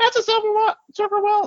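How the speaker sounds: very high, shrill, whiny voice. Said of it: "are you picturing Gilbert Godfrey as his voice".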